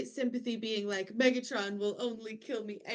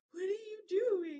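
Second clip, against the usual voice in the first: put-on very high-pitched small child voice; 9 semitones higher than usual. Retelling how a character stares like a kid: imitating a kid. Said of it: "like a kid being like".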